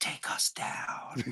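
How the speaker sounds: hushed, breathy whisper under the breath. Acting out whispering an order to the pilot: whispering to the pilot. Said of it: "whisper to the pilot and go".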